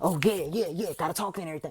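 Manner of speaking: imitated hyper, restless, overactive talking. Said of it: "they can't just sit down like I'm sitting".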